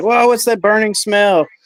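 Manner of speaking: put-on screaming, very high-pitched. Retelling how the parents reacted to a burning smell: imitating parents screaming. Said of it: "my parents were screaming at me like".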